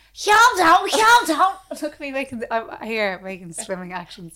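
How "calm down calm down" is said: put-on Liverpool accent, very high and loud. Showing what she can do, pretending to swim: put-on Liverpool accent. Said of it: "pretending I'm from Liverpool".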